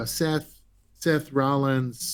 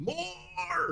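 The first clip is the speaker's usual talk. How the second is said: put-on intense shouting voice, higher and quieter; 13 dB quieter than usual. Answering a question about a score, in an Adam Driver voice.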